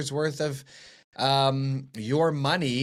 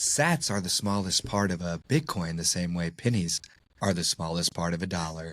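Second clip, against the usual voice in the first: put-on radio announcer voice, pitched lower; 9 semitones lower than usual. A co-host keeps reading an ad for Sat Chats in a low, slow NPR-style voice. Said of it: "I'm gonna keep rolling with it".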